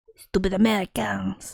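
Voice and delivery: pouting fake French accent. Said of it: "constantly pouting and talking and being like".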